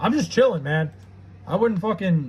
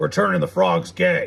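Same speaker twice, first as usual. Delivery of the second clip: rough, roughed-up, creaky, creaking put-on voice. Doing a voice they admit they do well: Alex Jones voice. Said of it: "I hate how like good I do that voice".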